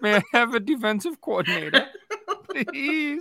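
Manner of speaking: very high, loud, desperate pleading voice. Teasing another speaker who sounded desperate: mock-pleading Oliver Twist voice. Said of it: "You sound like Oliver Twist".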